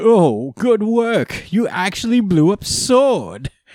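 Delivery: high, slow, mocking, sneering villain voice.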